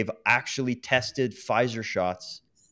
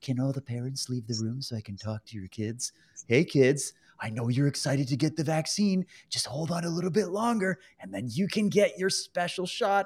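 strange, weird, creepy newscaster voice; 3 semitones higher than usual. Recounting what Trudeau said on the news: creepy Trudeau impression. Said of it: "he does this weird, creepy thing where he comes on the news and he goes".

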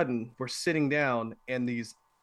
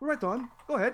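terrible put-on Irish accent, higher pitched; 12 semitones higher than usual. Retelling what a bartender said at an irish bar: imitating a bartender, bad irish accent. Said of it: "Terrible accent".

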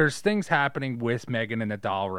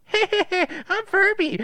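very high, loud, drawn-out talking-toy voice; 6 dB louder than usual. Retelling a toy waking up at night: Furby voice. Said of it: "this opens its eyes and you hear it go".

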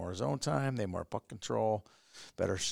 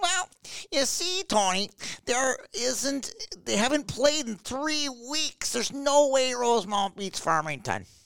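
very high, loud, needling mocking parody voice; 7 dB louder than usual. Imitating the other speaker explaining a pick: imitating the other speaker. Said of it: "I'm gonna imitate you now".

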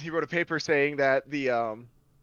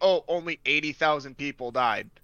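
normal talking voice

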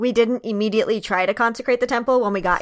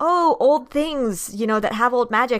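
usual speaking voice

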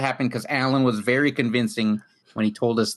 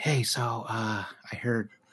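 put-on whispery radio voice, much quieter; 8 dB quieter than usual. Joking about radio that quietly reported the news, in an NPR whisper voice. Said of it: "They just whispered to the mic".

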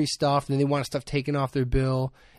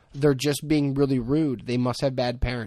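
ordinary talk

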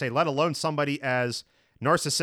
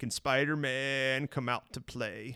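taunting, mocking supervillain voice; 5 dB quieter than usual. Retelling a movie scene where the villain taunts the hero: Willem Dafoe impression. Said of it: "pretty good Willem Dafoe right there".

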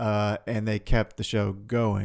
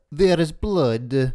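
raised, put-on attempt at Russian accent; 5 semitones higher, 7 dB louder than usual. Asked to say a phrase in his best Russian accent, Russian accent. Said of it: "Can you say there is blood in your best Russian accent".

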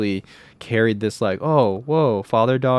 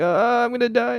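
play-acted, shrill, very high, panicked freak-out. Retelling a film scene after being offered a kiss: imitating someone freaking out. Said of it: "freaking out".

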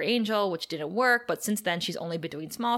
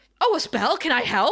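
high, loud, super desperate, thirsty eagerness. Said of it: "super desperate and thirsty".

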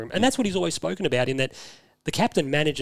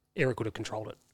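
play-acted quiet, dead-level, dry deadpan; 3 semitones lower, 7 dB quieter than usual. Retelling a remark made at a player's first training session: retelling a deadpan remark. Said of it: "he just deadpans".

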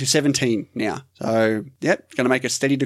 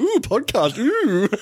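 very high, teasing, mocking squeal of ooh; 10 semitones higher than usual. Teasing the other speaker by repeating their reaction: imitating the other speaker's "ooh". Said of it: "you're going".

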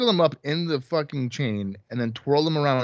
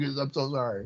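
put-on begging, quieter; 6 dB quieter than usual. Speaker acts out how a man who once threatened now apologizes: imitating him begging. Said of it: "Now he's begging".

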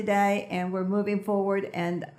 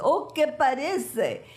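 really bad put-on Brazilian accent, high pitch; 5 semitones higher than usual. Telling how they called a friend about starting a talk show: V's bad Brazilian accent. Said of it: "she had a real bad accent".

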